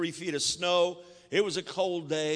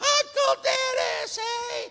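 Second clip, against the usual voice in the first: put-on, very high girlish voice; 3 dB louder than usual. Retelling finally giving in to a man's demand, in a put-on girlish voice. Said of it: "in a girlish voice I said".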